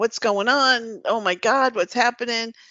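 put-on panicked scream. Retelling a scene, the speaker acts out the girl's lines: retelling a panicked scream. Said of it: "the girl starts screaming".

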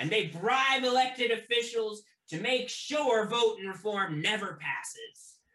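rousing loud shout. Voicing a speaker on boxes calling out to passersby: shouting to a crowd. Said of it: "he just sort of shouts out".

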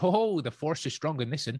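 put-on West Country accent. Imitating Darth Vader's lines as if voiced by David Prowse: David Prowse's West Country voice. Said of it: "if they had have actually used his voice".

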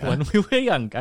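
poor, failed put-on Welsh accent. Quoting the man who cut his hair, in a bad Welsh accent. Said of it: "Just can't do it".

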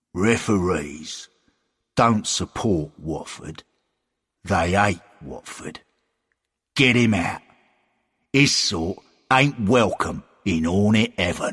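growled, bristling, hostile tone. Reading a story, voicing Frank as a referee arrives: growling. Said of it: "Frank growled".

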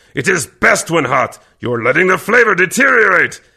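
very high-pitched, loud, snarling growl. Narrating a story, reading Kervek's retort to the human: Kervek growling deeply. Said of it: "Kervek growled deeply".

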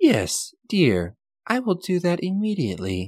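female robot voice, robotic. Game narrator voices the reply heard over the comm link, robotic female voice. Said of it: "you hear a robotic female voice on the comm link".

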